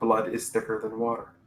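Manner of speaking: ordinary talk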